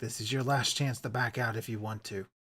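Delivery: very quiet, low, half-whispered voice. Narrator voicing the guide Rudolph at the door to the group, half-whisper. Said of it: "he whispers to all of you".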